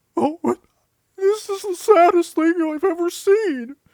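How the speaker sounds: very high, loud, woeful cartoon fish voice. Suggesting ways to portray a fish character: sad fish character voice. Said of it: "or what if he's sad?".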